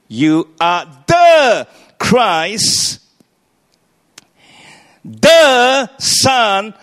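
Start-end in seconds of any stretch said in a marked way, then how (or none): 0.2-5.9 heavy stress on "the", "you" left light. Revisiting Simon Peter's reply in an evening talk, stress on the. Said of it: "emphasis is on the, not you".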